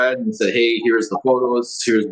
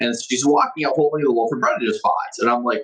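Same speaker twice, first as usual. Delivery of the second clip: ordinary delivery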